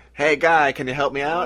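put-on polite Midwestern accent. Retelling Mayor Fuchs calling the governor for help, in a put-on Midwestern polite cry. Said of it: "a very Midwestern polite cry".

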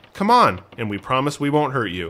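usual speaking voice

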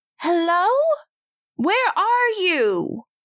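high-pitched, projected thrown voice. Throwing the voice to distract a guard: thrown voice calling out. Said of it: "I throw my voice and I say".

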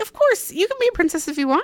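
reassuring tone, high-pitched and fast.

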